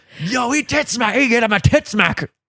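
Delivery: high-pitched wrestling announcer call. Calling a move as a commentator would, use Vince's commentary voice. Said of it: "Why do you have Vince's voice?".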